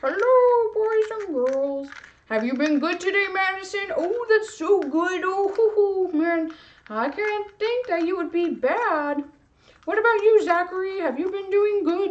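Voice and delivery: high, cute, funny little cartoon voice. Giving an object a face and addressing boys and girls, in a cute, funny voice. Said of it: "a really cute, funny voice".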